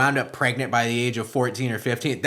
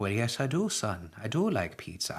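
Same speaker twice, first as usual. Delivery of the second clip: put-on Irish accent; 2 semitones higher, 12 dB quieter than usual. Telling a joke, voicing the priest answering the sheriff, in an Irish priest accent. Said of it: "it's an Irish priest".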